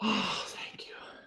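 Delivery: whispered mutter under the breath. She replies to the group wanting to stay a little while: muttered under her breath. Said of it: "she sort of says under her breath".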